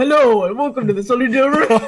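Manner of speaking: super deep, dropped bass voice. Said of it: "very deep".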